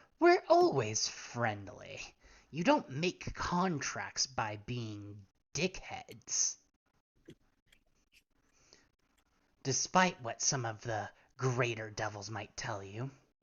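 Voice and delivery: low impish character voice. Narrating a scene and voicing the other imp, in an imp voice. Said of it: "The other imp would go".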